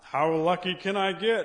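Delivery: loud, slow, booming hard-of-hearing voice.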